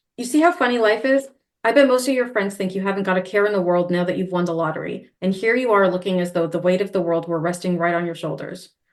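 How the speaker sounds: plain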